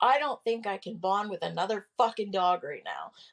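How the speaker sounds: distressed voice. Retelling what was said to the instructor about a new dog: imitating own upset words. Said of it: "I was very, very upset".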